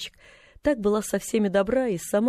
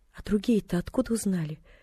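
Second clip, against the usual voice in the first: trembling, unsteady, quavering voice. Narrator reads a character's question in a novel, trembling voice. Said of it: "дрожащим голосом осведомилась".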